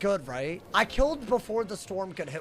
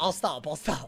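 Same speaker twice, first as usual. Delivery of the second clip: usual speaking voice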